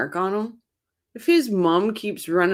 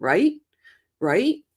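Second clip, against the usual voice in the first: pushy, insistent, higher, mock, badgering "right?". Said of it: "did he have to yell at Rashi and then every time say".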